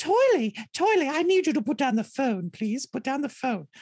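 put-on motherly voice with British accent. In a role reversal, playing the other person's mom, imitating mom in British accent. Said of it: "Let me get my mom's voice on".

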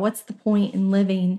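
ordinary delivery

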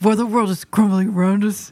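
put-on cartoon reindeer voice. Podcast co-host asked to read a text in Kristoff's voice for his reindeer. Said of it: "read this in Kristoff's voice for his reindeer".

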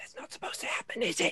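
hushed, barely voiced whisper. Narrating a scene, voicing a gnome who whispers to the other gnome: whispering. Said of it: "Whispers something over to the other one".

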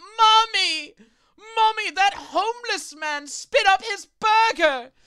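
put-on piercing little-girl shriek, very high and loud. Voicing a little girl in the next booth: screaming little girl. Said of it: "scream out".

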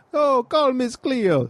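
very high pitch, pushed way up, done badly. Describing an infomercial psychic, doing a horrible Miss Cleo impression. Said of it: "Horrible impression".

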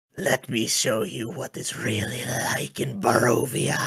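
incubus character voice. Voicing a smiling, fanged incubus revealing itself to a player: voicing an incubus. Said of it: "he smiles a fanged, toothy smile and says".

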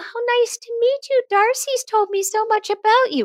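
tiny, very high little voice. Retelling how a mother greeted her teen's friends: mom's tiny little voice. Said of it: "the little tiny voice that your mom had".

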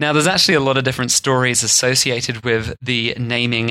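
normal talking voice

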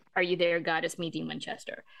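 plain

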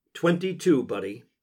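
plain

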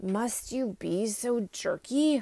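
sleepy, drowsy, half-asleep voice. A private in a wheelchair complains to the narrator, in a sleepy voice. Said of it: "said Private Patterson in a sleepy voice".

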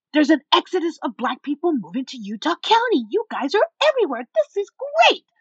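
high, swooping, thrilled, acted excited yell. Speaker retells what a woman yelled at him while people looked on, imitating a woman yelling. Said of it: "And she's yelling this".

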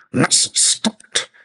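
sharp, very high, loud snapping voice. A father cuts off his pleading daughter at the door; snapped. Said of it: "he snapped".

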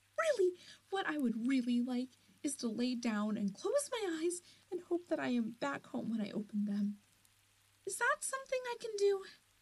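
frightened, worn-out pleading. Someone lost in a land of magic begs to sleep, scared, exhausted pleading.

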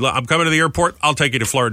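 ordinary delivery

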